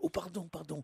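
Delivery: hushed, quiet library voice.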